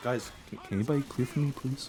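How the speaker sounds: put-on very calm, easy voice. Imitating a player asking teammates for a clear: imitating Nisha, very calm. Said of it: "He's like".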